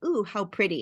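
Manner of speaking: ordinary delivery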